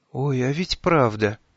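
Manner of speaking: whisper full of horror. Uli answers the narrator, whispering in horror. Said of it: "с ужасом прошептала Ули".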